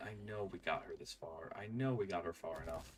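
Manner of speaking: plain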